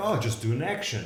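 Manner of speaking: normal talking voice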